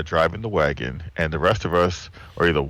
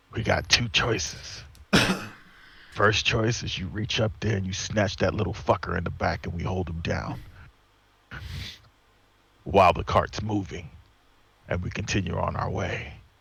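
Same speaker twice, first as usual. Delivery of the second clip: in-character whisper, quieter; 3 semitones higher, 5 dB quieter than usual. Whispering a plan to the barbarian in a dark cart: whispering in character. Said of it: "and I whisper to him".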